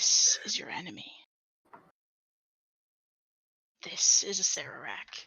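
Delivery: low, hushed, close whisper. Game narrator voicing a voice heard in a player's dream, in a whisper. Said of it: "like in a whisper to you".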